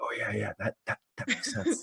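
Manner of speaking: whispered, very soft, hushed, barely audible. Imagining the founders talking to each other: imitating hushed whispering. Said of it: "start whispering in, like, hushed tones".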